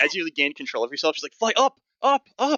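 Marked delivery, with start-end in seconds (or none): 1.3-2.6 breathless panting, very high, very slow, drawn out. Narrating a scene where Alicia holds on tightly to the listener, panting. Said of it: "Alicia is basically like panting".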